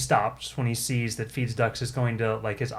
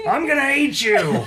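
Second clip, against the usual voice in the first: shrill, ear-splitting scream, very high and very loud; 13 semitones higher, 8 dB louder than usual. Narrating a scene, voicing a character who is screaming. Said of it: "He's just screaming at it".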